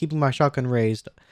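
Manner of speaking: plain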